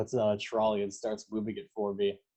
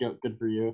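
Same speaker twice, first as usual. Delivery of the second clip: ordinary talk, nothing marked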